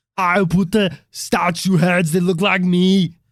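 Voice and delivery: put-on speaking with an Austrian accent. Playing Eric Von Daniken's brother from Austria, in an Arnold Von Daniken voice. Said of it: "from Austria".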